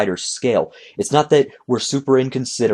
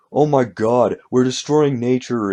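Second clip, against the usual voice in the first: snide, sarcastic, mocking parody voice; 2 semitones higher than usual. Mocking people who complain about humanity: sarcastic imitation of people. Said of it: "I'm sorry I'm doing these impressions".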